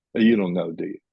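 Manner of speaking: plain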